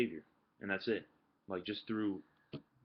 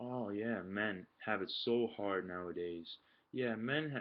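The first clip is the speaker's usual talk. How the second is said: put-on slow, belittling sarcasm, cut off mid-word. Retelling how a woman cut in: imitating sarcastic belittling tone. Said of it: "she was being sarcastic and belittling".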